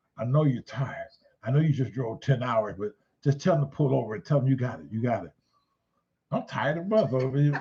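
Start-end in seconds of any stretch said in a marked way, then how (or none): 0.2-5.3 hushed, half-whispered, fatherly tone. Retelling what his father half-whispered in the car: imitating father half-whispering. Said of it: "So he started whispering to me".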